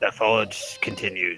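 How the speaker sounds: wet, bubbling, gurgling voice. Voicing a voice heard in a player's head: gurgling voice in your head. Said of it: "you hear the gurgling voice in your head".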